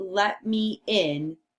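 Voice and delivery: ordinary talk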